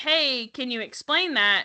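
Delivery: ordinary delivery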